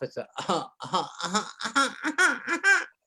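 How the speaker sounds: very slow coughing sobs, swooping upward into a wail. Demonstrating how to sell a baby cry to the audience: a baby cry, rising to highest pitch. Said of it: "start low and you keep going up until you get to the highest pitch".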